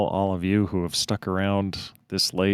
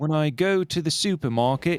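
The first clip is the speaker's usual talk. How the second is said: high put-on New Zealand accent, drifting British; 8 semitones higher than usual. Showing a learner how the accent goes, Kiwi accent that sounds British. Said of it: "very British".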